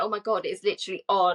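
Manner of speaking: ordinary talk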